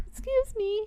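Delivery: very high, meek, timid squeaky voice. Imitating a movie creature's voice: imitating a meek squeaky voice. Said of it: "it was also the voice".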